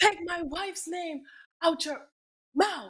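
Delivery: venomous high delivery. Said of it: "give me the [name] impression".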